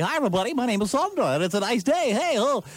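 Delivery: chirpy, bright on-air delivery. Mocking how female radio hosts sound on air: imitating a perky female radio host. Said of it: "they're just Jill Perky".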